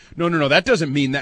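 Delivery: ordinary talk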